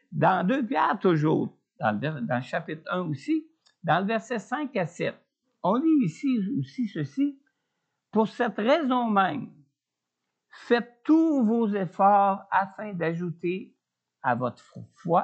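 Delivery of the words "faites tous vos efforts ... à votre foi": stumbling, fumbling delivery, tripping over the words. Reading a bible verse aloud to listeners, stumbling over words. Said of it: "je bafouille ce matin".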